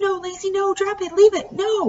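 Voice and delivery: shrill, high-pitched screaming, very high. Burke screams at Lacey as the snake bites her face; screaming. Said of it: "Burke screamed at her".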